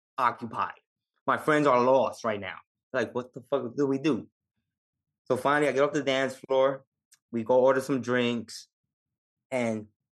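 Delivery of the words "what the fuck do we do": ordinary talk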